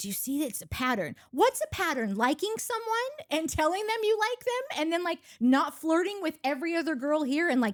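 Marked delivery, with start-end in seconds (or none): 0.0-1.1 soft, hushed, whispered aside. Retelling what Ace whispered while watching them: imitating Ace whispering.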